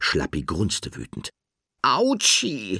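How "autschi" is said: high, squeaky little yelp. Narrator reading Nickel after she falls from the curtain, squeaky. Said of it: "piepste Nickel".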